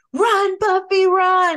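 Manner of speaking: very high, shrill, full-throated, top-of-lungs shout. Recounting how a guy two rows behind jumped up, retelling his shout. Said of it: "Like at the top of his lungs".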